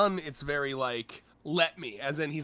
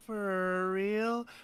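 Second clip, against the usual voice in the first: dazed, sedated, drowsy voice, pitched up; 5 semitones higher than usual. Comparing two translations of a line: imitating a sedated voice. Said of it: "Zuns makes her kinda sound, like, s-, sedated".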